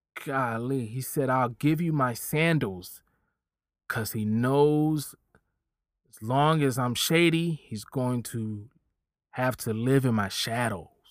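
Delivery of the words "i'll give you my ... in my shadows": ordinary delivery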